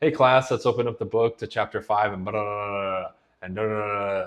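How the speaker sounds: boring, lifeless, flat droning teacher monotone. Imitating boring teachers starting a class, in a boring monotone teacher voice. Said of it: "very monotone".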